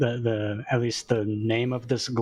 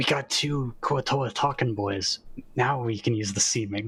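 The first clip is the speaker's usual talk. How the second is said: hushed whispering voice. Speaking in character to the group once out of earshot: whispering. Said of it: "I wanna whisper".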